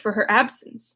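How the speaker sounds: ordinary delivery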